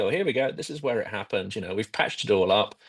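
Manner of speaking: ordinary delivery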